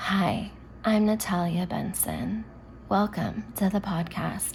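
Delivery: chill, soft, slow radio DJ delivery. Describing a podcast DJ, the speaker imitates her intro in a soft radio voice. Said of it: "her voice is like too like soft radio".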